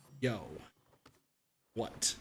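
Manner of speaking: mock irritated, angry voice. Retelling how a coworker picked up when called, imitating an angry answer. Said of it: "he angrily picks up and is like".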